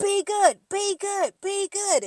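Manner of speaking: unhinged screaming, very high. Retelling another cast member mocking him, imitating someone screaming. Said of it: "your man keeps screaming at you".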